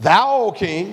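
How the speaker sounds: put-on, snide, needling smart-alecky tone. Retelling a bible verse where men address the king, in a mock smart-aleck tone. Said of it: "a little smart aleck way".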